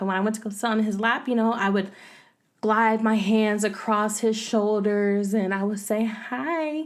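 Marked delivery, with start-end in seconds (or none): 6.1-6.8 soft, small, sweet, cute voice. Recalling greeting him while sitting on his lap, in a little cute voice. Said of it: "like in my little cute voice".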